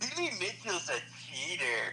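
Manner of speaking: put-on, swooping cartoon character voice. Retelling what a voice actor answered, imitating his cartoon character voice. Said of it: "voice from the character, uh, from the show".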